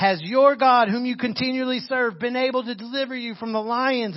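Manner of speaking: mock calling out loudly at full voice. Retelling the Daniel story, the idol worshiper calls to Daniel through the stone, yelling. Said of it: "lays up against it and yells".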